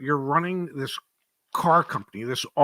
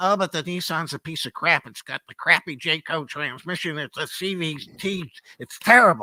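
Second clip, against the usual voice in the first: whiny put-on complaining voice. Imitating audience members who call the nissan a piece of crap: imitating complaining audience members. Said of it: "Why do you use that voice".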